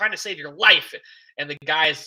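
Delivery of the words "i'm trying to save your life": loud, heated in-your-face yelling up close. Retelling a scene where Sisko confronts a man: imitating Sisko yelling. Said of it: "yelling at him".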